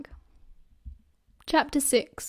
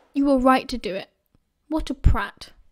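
usual speaking voice

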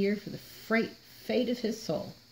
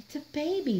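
high muttering, words barely shaped; 7 semitones higher than usual. Unwrapping a crying bundle beside a dead woman, a man is muttering. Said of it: "muttered Frollo".

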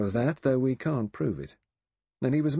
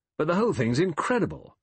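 pitched-up, testy, irritable, exasperated disbelief; 6 semitones higher than usual. Narrator reading a novel's epilogue, the Assistant Commissioner speaking, irritable. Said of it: "said irritably".

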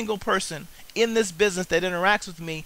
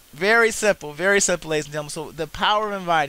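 usual speaking voice

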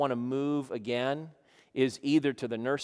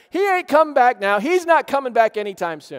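high, loud mocking sneering scoff. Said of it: "how many of the scoffers are like".

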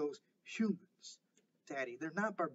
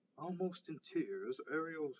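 ordinary delivery

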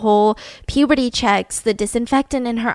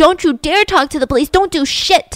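put-on, freaking-out screaming bloody murder; 5 semitones higher, 4 dB louder than usual. Telling the story, the speaker voices Shelley screaming at everyone: imitating someone screaming. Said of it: "she's screaming at everyone".

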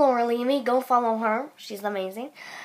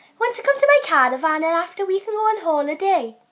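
put-on Welsh accent; 5 semitones higher than usual. Taking turns doing accents, trying a Welsh one: Welsh accent. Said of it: "we're going to do Welsh next".

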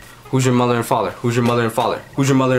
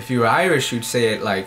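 ordinary delivery

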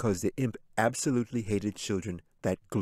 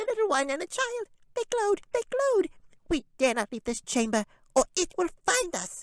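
very high, squeaky, trembling, nervous tiny imp voice. Narrator reads the tiny imp answering the voice from the shadows, squeaky nervous imp voice. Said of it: "the tiny imp squeaked and trembled as it chattered out nervously".

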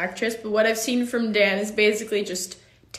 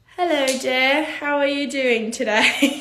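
fake, put-on British accent; 4 semitones higher than usual. Asked to try a British accent, the speaker greets the other person: put-on British accent. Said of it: "Can we do a British accent?".

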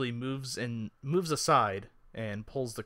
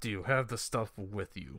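put-on brassy dragonborn character voice; 2 semitones lower than usual. Voicing a brass-skinned dragonborn in the scene: dragonborn character voice. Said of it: "And there is a muscular... There's actually a dragonborn. A brass-skinned dragonborn. Standing in front of it".

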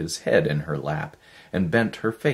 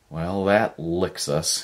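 slow, drawn-out muttered words. Narrator reads a man stroking the dog after running out of metal, muttering. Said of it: "he muttered".

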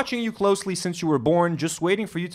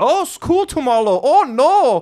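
crude, cartoonish, high, slow, exaggerated Chinese accent; 8 semitones higher, 8 dB louder than usual. Retelling a chat where a guy answers a girl in an accent: South Park mock Chinese accent. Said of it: "I don't know why I'm doing the accent too".

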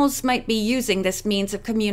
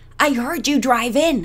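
stage whisper, loud; 2 semitones higher, 4 dB louder than usual. Reading a character's line as she opens the front door, loud whisper. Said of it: "she said in a loud whisper".

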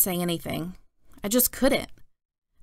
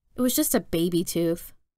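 ordinary delivery

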